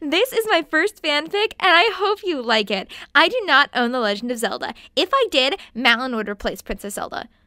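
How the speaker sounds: put-on voice of a child about twelve years old. Reading an old author's note aloud: imitating my twelve-year-old self. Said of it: "I'm trying to do an impression of my twelve-year-old self".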